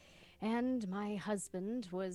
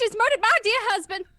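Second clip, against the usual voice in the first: shrill, very high, very loud screeching voice; 17 dB louder than usual. A woman character cries out to a train worker; screeching. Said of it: "I'm screeching".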